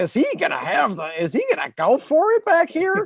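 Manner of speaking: stupid little raspy voice, very high, swooping sing-song. Imitating Collinsworth asking whether they will go for it: raspy Collinsworth impression. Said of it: "in that stupid little raspy voice".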